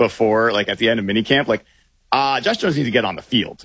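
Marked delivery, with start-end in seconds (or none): 2.4-3.6 put-on stern parent voice. Retelling a coach's words about a player: imitating Mike McDonald's stern parent voice. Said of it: "the Mike McDonald parental voice".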